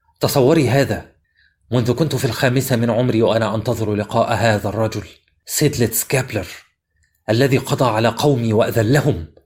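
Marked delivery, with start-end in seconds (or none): none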